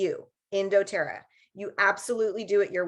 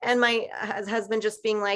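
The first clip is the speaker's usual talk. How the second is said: plain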